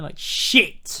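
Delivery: harsh, forceful, aggressive delivery. Host repeating the show's opening words to a co-host, aggressive delivery. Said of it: "I'm saying it very aggressively".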